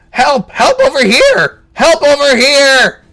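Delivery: shrill goblin shout, very high and very loud. Voicing a fleeing goblin running back towards town: goblin shouting for help. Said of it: "you hear him shouting".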